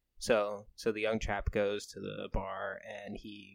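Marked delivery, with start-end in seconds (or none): none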